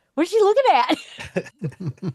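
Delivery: puzzled, drawn-out high voice.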